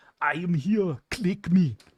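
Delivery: put-on very high, slow, loud drawl in Austrian accent. Praising a StarCraft two unit, quote it in the Thor voice, an Austrian Arnold voice. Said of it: "Old Cyan had that Austrian Arnold voice".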